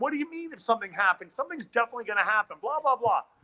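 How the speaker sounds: put-on ranting, scolding yell. Retelling how a friend reacted to a line in the trailer: imitating someone yelling. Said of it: "he starts yelling at me going".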